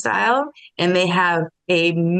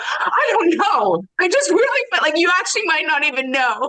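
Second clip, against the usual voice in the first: exasperated, frustrated, fed-up, at the limit; 11 semitones higher than usual. Illustrating a reply when asked why you are shouting: frustrated. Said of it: "And in frustration".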